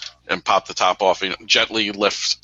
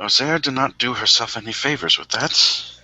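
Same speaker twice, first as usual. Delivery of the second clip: whispered for others to hear; 4 semitones higher than usual. Speaking in character to a companion about what just happened: half-whispering. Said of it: "I whisper to Saffron".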